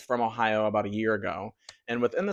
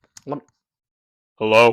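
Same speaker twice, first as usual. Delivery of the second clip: put-on low voice, louder; 11 dB louder than usual. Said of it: "my straight voice 'cause it's just really low".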